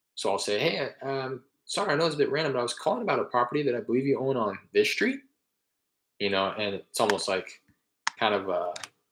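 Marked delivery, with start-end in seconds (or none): 0.6-5.2 questioning tone with upturned inflection. Showing how they open a call to a property owner: questioning inflection. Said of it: "the inflection in my voice, the tone of my voice, um, I intentionally have it come across as a question".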